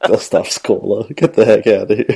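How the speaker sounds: stifled laughter under the words. Reacting to another speaker's suggestion, holding back a laugh. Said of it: "I'm trying not to laugh".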